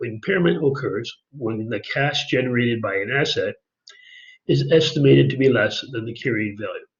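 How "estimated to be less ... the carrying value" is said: ordinary talk, nothing marked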